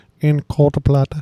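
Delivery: tiny little voice, shrunk right down. Quoting a favorite movie line in the Truman Capote voice. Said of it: "I just love doing the Capote voice".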